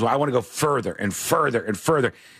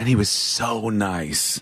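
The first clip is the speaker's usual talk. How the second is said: frustrated, exasperated, at wit's end; 4 semitones lower than usual. Retelling what a comedian said backstage: imitating Josh Fowler, exasperated. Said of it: "his face is, is red, and he's, like, exasperated".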